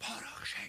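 loud stage whisper. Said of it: "Called the stage whisper".

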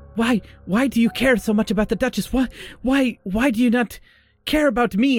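angry loud yelling. Voicing a character demanding why she ignores him: yelling in anger. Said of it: "now it's like he's, like, yelling".

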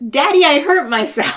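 put-on very loud, high little-child yell. Retelling what the kid yelled after falling down, imitating a kid yelling. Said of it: "what he yells is".

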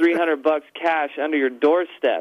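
ordinary delivery

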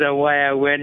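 normal talking voice

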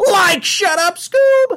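put-on very high, goofy stoner cartoon voice. Pitching himself for the job, in a Shaggy voice. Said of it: "I'm the only Shaggy you need".

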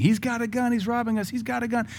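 mock alarm screamed at a very high pitch. Speaker retells a passenger running inside during a robbery, retelling a scream. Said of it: "She runs inside screaming".

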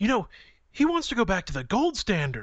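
mock, shocked, aghast, horrified, high swooping voice. Retelling what a woman said to the speaker, imitating a horrified voice. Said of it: "this horrified voice".

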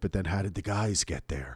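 everyday, normal speaking voice. Retelling what Brett said, as a Brett impression. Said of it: "That's my Brett impersonation".

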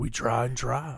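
put-on, fake macho, manly voice. Joking about trying for children together: put-on manly voice. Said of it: "I don't know why I'm in that voice".

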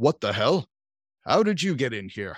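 curt, brusque, deep baritone delivery. Narrating a game scene, the speaker voices an unseen character: brusque baritone voice. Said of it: "you hear a brusque baritone voice say".

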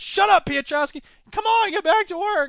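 loud, squeaky adolescent voice. Scolding Piotrowski, in a squeaky teen voice. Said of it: "You sound like the squeaky-voiced teen from The Simpsons now".

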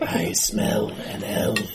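storybook talking wolf voice. Voicing a wolf growling from inside a cave: talking wolf voice. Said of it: "The wolf is talking to me?".

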